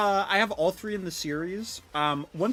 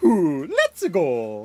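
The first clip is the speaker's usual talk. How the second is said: loud, big game-character shout, pitch swooping widely; 2 semitones lower, 7 dB louder than usual. Showing how they randomly slip into a voice: Mario voice. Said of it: "Mario voice".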